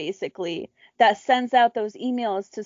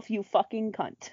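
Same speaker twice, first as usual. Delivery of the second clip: put-on mumbling under breath, much quieter; 8 dB quieter than usual. Retelling what she said while already annoyed, retelling a mumble to herself. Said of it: "I literally mumbled to myself".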